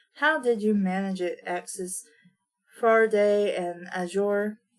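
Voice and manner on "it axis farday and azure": plain reading voice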